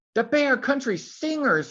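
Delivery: very high, thrilled, excited squeal. Reading a story aloud, a character squealing to Papa. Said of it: "Maggie squealed".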